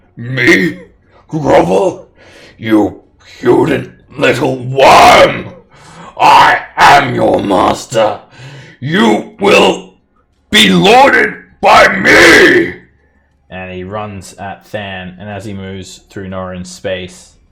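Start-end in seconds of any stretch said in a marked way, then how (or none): 0.2-12.8 very loud, very slow, furious, booming giant yell. Voicing a furious fire giant told to grovel: furious fire giant yelling. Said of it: "he yells in giant".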